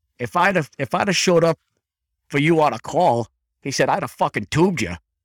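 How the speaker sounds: put-on Boston accent. Speaker quotes the man who sat at his bedside, in a Boston accent. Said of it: "and that Boston accent".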